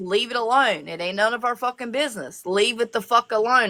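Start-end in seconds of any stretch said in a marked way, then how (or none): none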